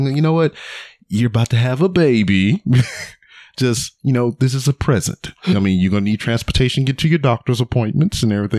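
thick, heavy, insincere sarcastic generosity. Recounting the reply when she kept offering to pay for the car, retelling sarcastic words. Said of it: "Being sarcastic as fuck".

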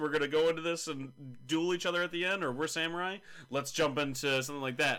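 normal talking voice

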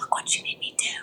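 soft, breathy whisper under the breath. Retelling a film scene where a character keeps whispering: imitating a whisper. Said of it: "because she's whispering".

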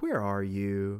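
playful, teasing tone. Showing how a Bible verse might sound: playful tone. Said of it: "is it playful?".

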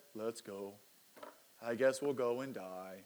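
low, gloomy donkey voice. Retelling a Bible story, Thomas answers Jesus in an Eeyore impression. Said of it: "with his best Eeyore impression".

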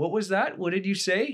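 very high, loud, taunting and scornful tone. Retelling how Trump answered a reporter, imitating Trump mocking. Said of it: "he was sort of mocking her".

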